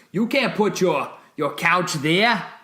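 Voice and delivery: put-on clichéd, laid-on stock Boston Yankee accent. Act out one side of an argument over where a couch can go, in a cliched Yankee accent. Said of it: "two cliched Yankee accents going at each other".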